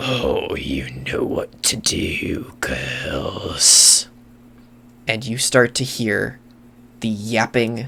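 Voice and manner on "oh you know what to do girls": very low, gravelly, slow rumbling drawl. Storyteller voices Master Cram answering the warning about intruders, deep gravelly voice. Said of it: "he says in a deep, gravelly voice".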